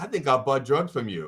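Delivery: hushed, secretive half-whisper. Retelling what a warm-up comedian said on stage: imitating a half-whisper. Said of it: "And he whispered to me".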